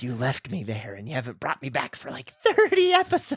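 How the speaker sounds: warped voice with swooping, off-sounding pitch. Introducing a script as a character: Scrippy Scripto voice. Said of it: "You sound a little fucked up".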